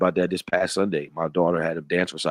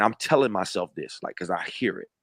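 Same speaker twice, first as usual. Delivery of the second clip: normal talking voice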